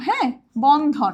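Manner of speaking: Bandhan said slowly, stretched into two syllables.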